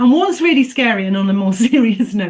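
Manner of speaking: speech broken up by laughs. Trying to turn to a serious point about the budget, laughing while talking. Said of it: "if I can stop laughing".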